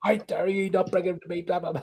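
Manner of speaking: mock high, loud, berating shout. Retelling how a man turned up and shouted at them: imitating someone shouting. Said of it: "starts shouting at them".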